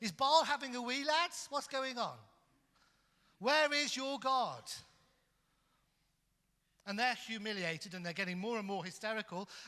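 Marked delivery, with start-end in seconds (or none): 0.0-4.6 play-acted, raised, loud, high-pitched jeering, taunting tone. Retelling how Elijah taunts the prophets of Baal: imitating a taunt. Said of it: "he starts to taunt the prophets of Baal".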